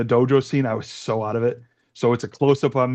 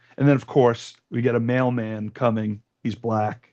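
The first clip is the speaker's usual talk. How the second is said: ordinary talk, nothing marked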